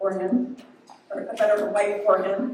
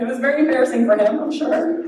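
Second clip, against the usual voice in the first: plain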